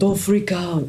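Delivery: put-on thick, heavy, laid-on French accent. Suggesting a calming line, delivered in a heavy French accent. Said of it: "with this heavy French accent".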